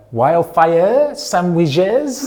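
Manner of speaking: fake, put-on French accent, very high pitch. Retelling ordering sandwiches in a shop: English with put-on French accent. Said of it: "I'm just speaking English with a French accent".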